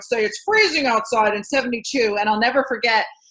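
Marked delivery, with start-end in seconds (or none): 0.2-2.2 big-city TV news anchor delivery. Retelling early days on air as an anchor: imitating own old news anchor voice. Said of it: "I would talk like this".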